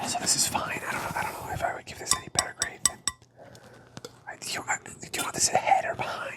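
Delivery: soft unvoiced ASMR whisper.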